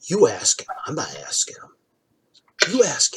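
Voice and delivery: very quiet, whispered mumbling back and forth. Voicing guards daring each other to ask about the owlbear: mumbling. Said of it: "kinda mumbling about the owlbear".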